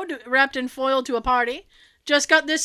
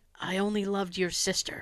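soft, hushed, low whisper under the breath; 7 semitones lower, 10 dB quieter than usual. Reading out a suggested line to end a chat: whispering.

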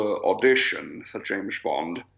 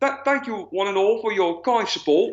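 high-pitched mock Cockney accent with lilt. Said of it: "with his perfect Cockney accent".

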